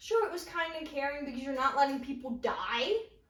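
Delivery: ordinary delivery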